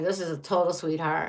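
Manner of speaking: heavy, dripping sarcasm laid on thick. Describing a card as a sweetheart while meaning the opposite: very sarcastic. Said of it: "I'm being very sarcastic here".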